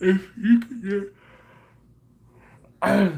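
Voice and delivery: high, halting speech with words breaking through a yawn. Asking listeners a question while preparing for a trip, yawning while talking. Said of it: "Sorry, I'm yawning again".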